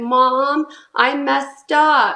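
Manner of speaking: tearful, crying, sobbing voice. Narrating a scam phone call, voicing the daughter on the line, imitating a daughter crying. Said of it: "as she's crying and sobbing".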